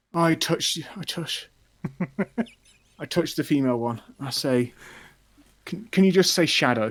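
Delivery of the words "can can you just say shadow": put-on childlike pleading tone, higher and faster. A player's character touches the female figure and asks again, childlike pleading tone. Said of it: "I ask with the tone of like a child pleading".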